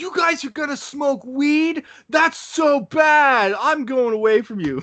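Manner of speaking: put-on high, slow, freaked-out panicked childlike shout. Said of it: "I'm freaking out".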